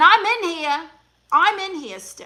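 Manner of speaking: high, loud, shrieking scream. Retelling being shaken inside a porta potty at a concert: retelling a scream. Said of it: "I'm screaming".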